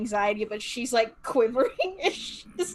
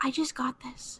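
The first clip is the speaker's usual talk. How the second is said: soft, slow whispering; 6 dB quieter than usual. Playing a character who whispers about her new sword: whispering in character. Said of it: "She's just gonna whisper and be like".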